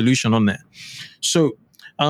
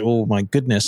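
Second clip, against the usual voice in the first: ordinary talk, nothing marked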